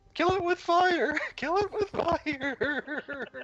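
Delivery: crying out, sobbing. A player's character yelling from around a corner during a fight, in a sobbing cry. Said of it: "This kind of sobbing cry".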